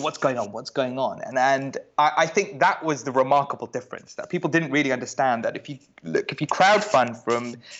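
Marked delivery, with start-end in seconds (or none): none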